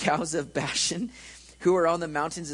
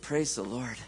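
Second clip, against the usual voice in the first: low, soft, relieved voice; 5 semitones lower, 5 dB quieter than usual. Telling a joke about a rider whose horse stops at the cliff, retelling relieved exclamation. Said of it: "wipes the sweat from his brow and goes".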